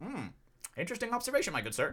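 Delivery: high, sing-song, very proper voice. Retelling own reply to a catcalling man: imitating own nerdy Poindexter reply. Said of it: "just trying to Poindexter it".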